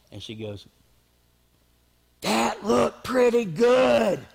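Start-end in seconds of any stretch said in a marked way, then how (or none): 2.2-4.1 put-on loud, high, drawn-out failed stage whisper. Retelling how Kelly leaned over in the theater, imitating Kelly's loud whisper. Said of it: "at least she thought she was whispering".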